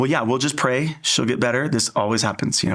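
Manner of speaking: ordinary talk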